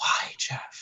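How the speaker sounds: soft, drawn-out mock sultry whisper.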